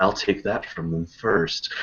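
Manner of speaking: said icily, cold and chilling. Retelling a favourite movie-trailer line: James Spader's cold delivery. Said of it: "just the way he said it so coldly".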